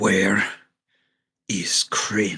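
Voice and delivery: winded, panting, heavy breathing. Voicing a character reeling from teleportation, in someone's face: heavy breathing. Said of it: "Just a heavy breathing Dragovar starts standing".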